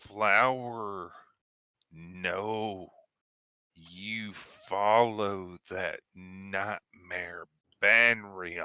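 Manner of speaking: angry, rough gravelly voice. A game narrator voices a creature answering a player, angry gravelly voice. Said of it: "an angry, gravelly chuckle ... and says".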